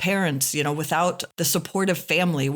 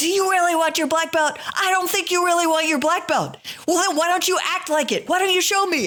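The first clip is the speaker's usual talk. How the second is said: put-on yell, pitched higher; 13 semitones higher than usual. Retelling how the speaker yelled at a student: retelling yelling at a student. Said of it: "I'm yelling at him".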